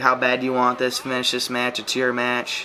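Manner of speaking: ordinary talk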